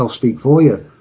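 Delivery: normal talking voice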